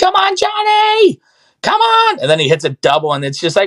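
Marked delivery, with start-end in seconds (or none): 0.0-2.2 put-on very shrill, very slow, drawn-out screaming. Describing parents filming their kids' games, imitating parents screaming. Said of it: "parents standing up with their phones out, screaming".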